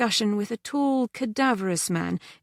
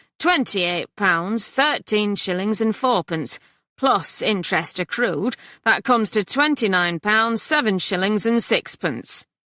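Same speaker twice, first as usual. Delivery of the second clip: nasty, unpleasant delivery with heavy, pointed stress; 4 dB louder than usual. Reading a story aloud, the coalman lists the debt owed: unpleasant emphasis. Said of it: "adding with unpleasant emphasis".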